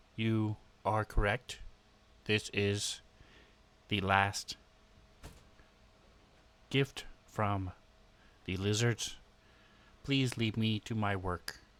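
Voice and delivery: mechanical, robot-like voice. A game character answers a question in a robotic voice. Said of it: "respond again in sort of a robotic voice".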